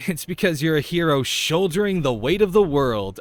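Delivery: maximally sarcastic tone. Reading a game line aloud, as sarcastic as possible. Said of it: "I say as sarcastically as possible".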